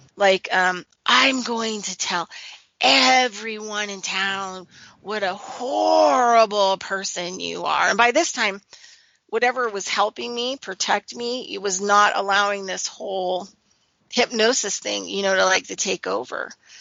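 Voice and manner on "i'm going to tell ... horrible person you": put-on demonic hissing. Retelling a threat from the woman: imitating demonic hissing. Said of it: "kind of hissing at me, like, demonically".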